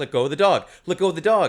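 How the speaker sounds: ordinary talk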